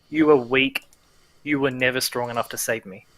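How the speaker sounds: demonic, otherworldly voice with swooping pitch. Retelling what she says after shoving you back, in a demonic-sounding voice. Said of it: "in this demonic sounding voice".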